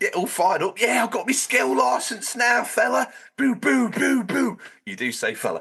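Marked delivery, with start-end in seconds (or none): 0.0-4.6 very high-pitched put-on cockney accent, bantering tone. Imitating the other speaker from two weeks ago: put-on cockney accent imitating a friend. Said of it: "It's the only accent I can do".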